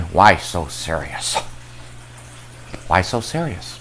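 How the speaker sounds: very quiet, breathy whispered villain voice. Plugging your other YouTube channels, give a sample of the Joker impression. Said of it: "the Joker impression".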